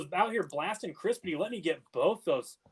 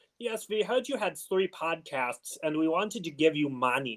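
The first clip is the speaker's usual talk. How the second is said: poor put-on German accent, unconvincing German man voice. Podcast co-hosts improvise a comic bit, bad German guy voice. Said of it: "I can't do a German guy".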